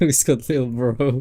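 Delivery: speaking while giggling and laughing. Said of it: "Sorry, I need to calm down".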